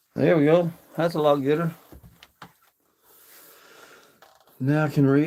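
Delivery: breathless, winded voice. Back inside after standing by a smoky fire, out of breath. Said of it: "I am so out of breath".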